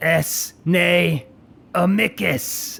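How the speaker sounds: drawn-out high words, very slow. Two characters look at each other, then up at you, and speak very slowly. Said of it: "say very slowly".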